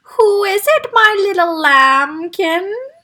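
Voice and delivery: trembling, shaky, high-pitched voice. A voice inside the house calls out to whoever is there, shaky voice. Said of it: "a shaky voice inside the house called".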